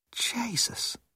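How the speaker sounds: hushed, barely audible, sincere whisper. Hillman reacts as the athletes vanish with the cart, whispered. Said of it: "whispered Hillman".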